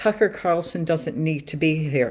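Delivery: normal talking voice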